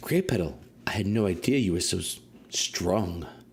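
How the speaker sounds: whispering in character voice. Voicing Waxenare whispering into Grey Petal's ear while carried: whispering as Waxenare. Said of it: "whispering things, wisdom into my ears".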